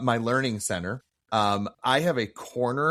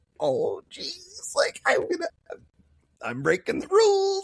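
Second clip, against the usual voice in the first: put-on very high, giddy, childlike kid voice. Retelling a man's reaction to being told to eat the candy: imitating a giddy little kid. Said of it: "he was like a little kid".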